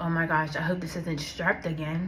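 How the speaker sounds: ordinary talk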